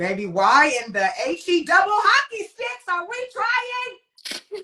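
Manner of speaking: put-on very high scream, swooping and drawn out. Retelling own reaction while reading the other speaker's story: retelling own screaming. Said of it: "I was screaming in here. Like I'm screaming now".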